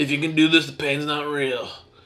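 put-on bro-y scratchy voice. Imitating the Kill Bill guy's pain speech: bro-y Kill Bill guy. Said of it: "He sounded very bro-y like that".

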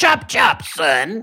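very high-pitched put-on British accent. Imitating a snooty talking dog in a British accent: put-on British accent. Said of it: "Or whatever a British guy would say".

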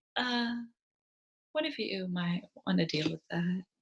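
gentle, soft-spoken, slow, unhurried and hushed. Recapping an episode, the speaker quotes Maul about the explosions: soft-spoken Maul impression. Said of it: "he's so soft-spoken".

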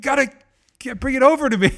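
mock yell, high. Retelling how a man swimming back to the boat yelled at the speaker; imitating someone yelling. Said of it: "he's yelling at me like".

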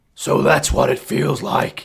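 put-on voice, rough and creaky. Quoting Batman in the film, left alone on a roof: Batman voice. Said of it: "he's putting on this fucking voice".

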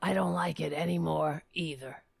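put-on gravelly voice. Retelling a phone call, quoting the caller: Jones's gravelly voice. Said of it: "his gravelly".

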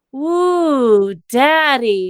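said slowly. Reading a comic fanfic aloud, a character's line said slowly. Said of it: "Tyson said slow".

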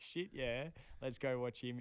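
ordinary talk

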